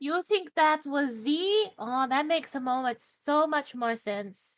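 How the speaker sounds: high, squeaky, little character voice. Player speaking in character during a game, squeaky voice. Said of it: "hate how squeaky this voice is".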